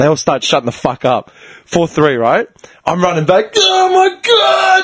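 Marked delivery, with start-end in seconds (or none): 3.6-4.8 mock, very high, head-off shrieking scream. Retelling running back after a goal: retelling a scream. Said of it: "I'm screaming my head off".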